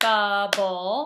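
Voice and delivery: split into separate syllables. Teaching how to break a word into parts, saying it syllable by syllable. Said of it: "And then you can clap it".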